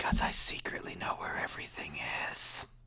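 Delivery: hushed, secretive, conspiratorial whisper. Voicing a character who leans in to a player: whispering in character. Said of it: "leans in and whispers in your ear".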